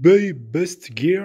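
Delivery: put-on English accent. Reviewer naming the website that sent a bike to viewers, in English accent. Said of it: "avec mon accent anglais".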